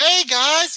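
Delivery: put-on voice with no bass. Retelling a planned walk-in greeting, taking all the bass out of the voice. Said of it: "I'm taking all the bass out my, out my voice".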